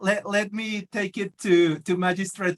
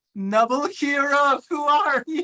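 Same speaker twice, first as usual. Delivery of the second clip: shouting, higher pitch; 6 semitones higher than usual. Yelling at a hero in a role-playing scene: yelling at a hero. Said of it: "I'm gonna yell at him".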